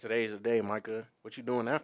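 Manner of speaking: plain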